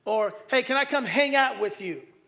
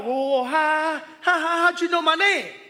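put-on startled woman's voice, higher pitch; 5 semitones higher, 4 dB louder than usual. Retelling a gas station woman's reaction to being greeted by name, imitating Cindy freaking out. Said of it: "And she freaked out".

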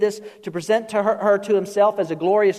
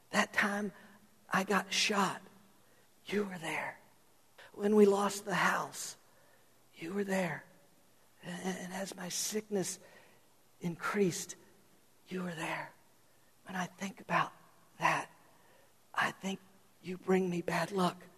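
mock feeble, weak voice, quieter; 15 dB quieter than usual. Retelling a joke where a sick husband speaks to his wife: imitating a weak voice. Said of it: "he's got a real weak voice".

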